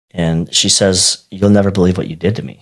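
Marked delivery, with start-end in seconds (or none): none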